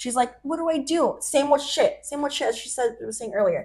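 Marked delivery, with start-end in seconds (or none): 0.4-1.2 acted, high, tearful crying voice. Retelling a friend's tearful call on the phone: imitating someone crying. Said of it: "She's crying to me".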